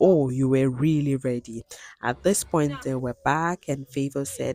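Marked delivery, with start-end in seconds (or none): none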